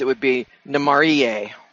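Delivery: Namarie stressed on its second-to-last syllable.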